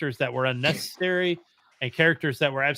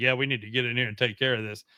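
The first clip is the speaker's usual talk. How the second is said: deadpan, flat monotone with unvarying level pitch; 3 semitones lower, 4 dB quieter than usual. Retelling a movie character's line: imitating a monotone delivery. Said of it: "he was so monotone at one point".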